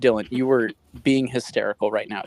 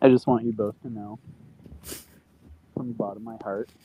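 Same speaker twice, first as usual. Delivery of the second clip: muffled, as if under a blanket; 3 dB quieter than usual. Speaking to the other two, sounding muffled like under a blanket. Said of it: "Why do you sound like you're under a blanket".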